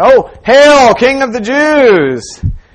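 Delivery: high, loud, slow mocking jeer. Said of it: "mocking Him said".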